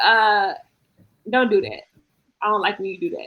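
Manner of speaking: put-on stern voice. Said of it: "he be stern with it".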